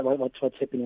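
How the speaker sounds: ordinary talk, nothing marked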